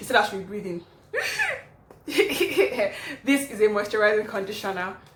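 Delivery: fast talk broken by laughter, catching breath.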